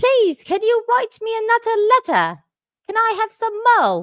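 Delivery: put-on British accent. Repeating own earlier line after chat calls it Oliver Twist: Oliver Twist British accent. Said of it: "Is that what I sounded like?".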